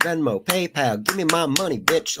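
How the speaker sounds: each word punched out separately, clap-talk. Imitating someone asking for money: imitating Jerry Springer clap talking, every word emphasized. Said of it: "when you're emphasizing every word".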